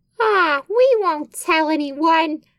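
very high, slow, dim-witted dopey drawl. Reading a story aloud, voicing Billy's reply in a stupid Billy voice. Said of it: "I'll just give Billy a stupid voice".

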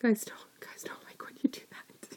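soft, unvoiced whisper, spoken to the side.

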